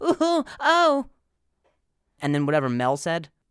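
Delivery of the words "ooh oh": high, loud moans. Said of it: "it was like".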